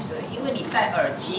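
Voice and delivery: ordinary delivery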